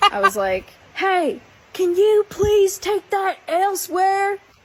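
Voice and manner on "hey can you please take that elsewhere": put-on heaviest Southern accent, very high-pitched. Retelling yelling across a pond to people with flashlights, heavy Southern accent. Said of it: "in my most heaviest southern accent".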